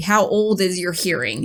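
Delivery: ordinary delivery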